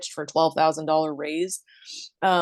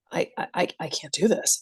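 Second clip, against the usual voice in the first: put-on fearful stammering, paralyzed with fear. Imitating someone about to do something scary: imitating someone paralyzed with fear. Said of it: "they get paralyzed with fear".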